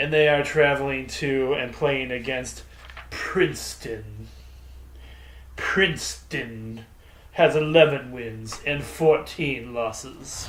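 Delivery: snooty, posh, private-school voice.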